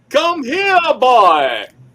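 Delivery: very high, very loud, swooping cartoon character voice. Calling to the boys during a group bit, Foghorn Leghorn voice. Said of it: "Y'all are sounding like a Froghorn Leghorn cartoon".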